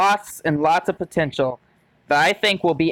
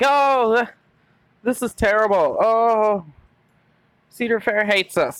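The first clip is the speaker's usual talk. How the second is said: mock whining and crying voice; 5 semitones higher than usual. Mocking people who complain about the new coaster, with mock whining and crying. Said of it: "just whining and crying like that".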